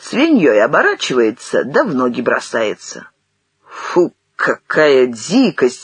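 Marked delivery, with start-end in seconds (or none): 3.6-5.9 scornful, disgusted snorting delivery. A listener responds to an old man's story, snorting. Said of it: "фыркнул Ашихмин".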